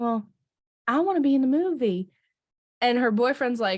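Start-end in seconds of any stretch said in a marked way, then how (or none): 0.0-2.1 put-on Southern accent, higher. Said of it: "talk in a Southern accent now".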